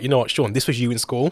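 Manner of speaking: ordinary talk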